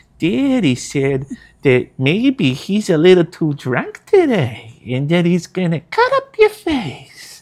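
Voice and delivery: high, sing-song, lilting, drawn-out voice. Recalling being the monologue coach on set, speaking as Little Jokey. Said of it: "Like I had that kind of voice".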